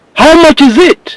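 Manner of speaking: shrill, very high voice. Retelling a past exchange, the speaker acts out the man's question, imitating his loud voice. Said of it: "He would ask in his loud voice".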